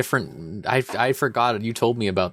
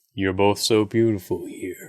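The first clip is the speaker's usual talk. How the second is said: put-on gruff action hero voice; 2 semitones lower than usual. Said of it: "role play Duke Nukem being sad".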